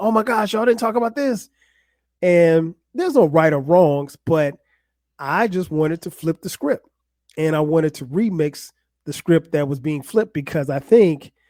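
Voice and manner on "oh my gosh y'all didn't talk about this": mock amped-up, excited outburst, pitched high. Retelling listening to a podcast, imitating screaming at the speakers. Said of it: "screaming at my speakers".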